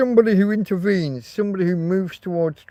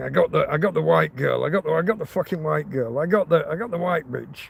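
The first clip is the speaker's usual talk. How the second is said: low, repeated mutter under the breath; 2 semitones lower, 3 dB quieter than usual. Retelling what the attacker said after the stabbing: imitating someone muttering. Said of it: "muttering to himself".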